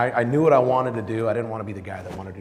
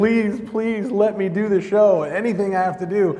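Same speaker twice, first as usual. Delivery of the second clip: very high, loud, tearful bawling plea; 11 semitones higher, 6 dB louder than usual. Retelling the phone call with the manager about joining the show: retelling a bawling plea. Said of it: "as I'm bawling on the phone".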